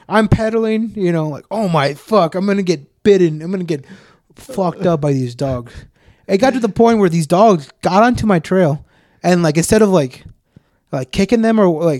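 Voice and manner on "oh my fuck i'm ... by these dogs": plain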